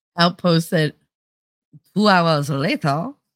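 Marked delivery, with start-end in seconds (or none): 2.0-3.1 English words in a put-on French accent. Retelling a line someone else said, in a French accent. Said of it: "in a French accent".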